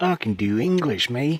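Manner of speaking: joking, fake mock Australian accent. Joking after a remark about learning English at Trump University: put-on Aussie-ish accent. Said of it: "That was not an English accent, or like American English accent. What was that? Like Aussie?".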